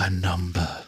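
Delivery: very quiet, soft, faint, hushed voice. Narrating a voice heard in the back of Xavier's mind, very quiet. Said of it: "the voice says very quietly".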